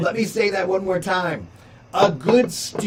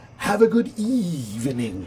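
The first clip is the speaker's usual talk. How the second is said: put-on theatrical voice, slow, drawn out, swooping. Signing off and thanking viewers, in a Vincent Price voice. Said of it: "I always used to love to say it that way, like the uh, Vincent Price".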